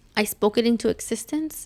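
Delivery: ordinary delivery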